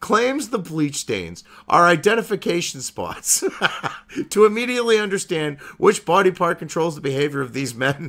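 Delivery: reading through bursts of laughter.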